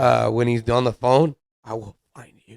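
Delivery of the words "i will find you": hushed, very quiet, deep, dead-serious low voice. Imitating a man's phone threat the way people meme him, mock-serious deep voice. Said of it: "how he's all serious with a deep voice".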